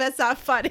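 words broken up, laughing through them. Reacting to a breakup story, laughing while talking. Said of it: "I don't mean to laugh".

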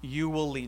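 gentle, calm, reassuring, soothing divine voice. Retelling a vision at thirteen, quoting the voice heard, in a soothing voice. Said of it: "I just hear in a soothing voice".

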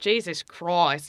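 put-on Australian accent. Showing the warm-up phrase for an australian accent. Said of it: "my word to get into it is Jesus Christ".

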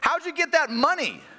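put-on very high, shouted little-kid voice. Retelling what the oldest boy yelled at a lady at self-checkout: imitating a child yelling. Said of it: "I hear my oldest yell at her".

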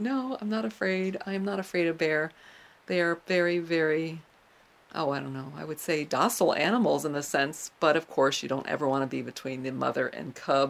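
ordinary delivery

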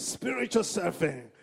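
booming preacher voice. Leading an audience to repeat a phrase, [name] preacher voice. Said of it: "like a preacher".

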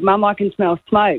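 plain

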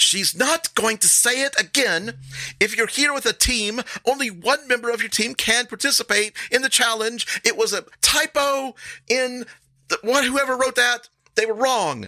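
brash, shrill, very high, drawn-out yell. In a role-playing game, a woman shields a goblin from the crowd, yelling brashly. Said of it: "a brash voice cuts through the chatter, and a blue-skinned woman pushes her way through the crowd and stands protectively in front of the goblin".

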